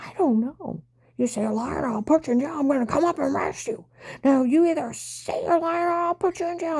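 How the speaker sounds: heated, furious shouting with rising pitch. Retelling a man who threatened to arrest the speaker, retelling an angry yell. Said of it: "And he's yelling at me".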